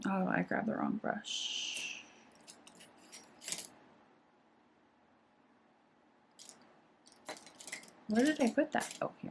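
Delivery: speaking in a whisper. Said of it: "whispering over here".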